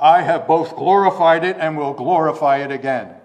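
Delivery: booming voice, as if from the heavens. Reading scripture aloud, speaker voices the voice from heaven: Heavenly Father impersonation. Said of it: "I'll do my best Heavenly Father impersonation".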